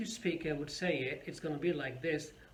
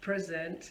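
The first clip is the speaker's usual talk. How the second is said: present said PRE-sent, weight on first syllable pre. Word stress lesson, 'present' as in birthday presents: 'present' stressed on first syllable. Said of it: "if I put stress on the first part or the first syllable of the word".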